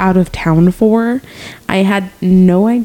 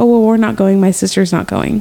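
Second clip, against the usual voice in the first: usual speaking voice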